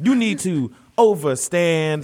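put-on beat poet delivery. Imitating a Hotep preaching about kings and queens: imitating a faux beat poet. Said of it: "starts talking like a faux, um, beat poet".

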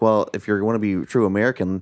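normal talking voice

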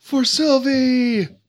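high, shouted, yelled battle cry. Voicing a character who charges into battle: yelling a battle cry. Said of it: "And he yells".

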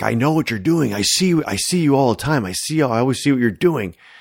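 play-acted, dead serious, focused. Retelling a character's line during a guessing game: imitating an intent delivery. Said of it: "all intently".

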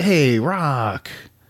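slight high whine. Recalling Mickey's tone when stopping Rocky: whining Mickey impression. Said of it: "Mickey's kinda whining a little bit there".

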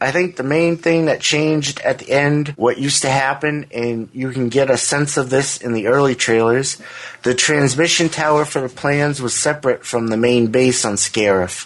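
ordinary talk

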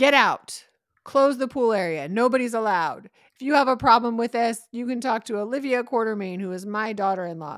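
loud, high-pitched screaming.

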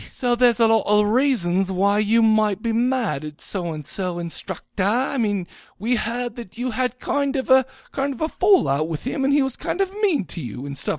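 put-on English accent. Retelling what someone said to a person, in a put-on english accent. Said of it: "Was that a good English accent?".

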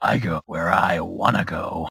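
deep, gruff character voice. Asked to do the intro like Wolverine, speaker answers in a Wolverine voice. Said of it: "do that same voice, but like Wolverine".

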